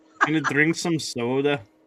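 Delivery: Minnesotan accent. Showing how the word soda sounds with a Minnesota accent. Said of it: "when I say, like, soda or Minnesota".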